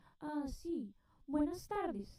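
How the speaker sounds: high, very slow, courteous telephone voice. Speaker imitating mother answering calls on the phone, imitating mom's phone voice. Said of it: "Her whole voice changed".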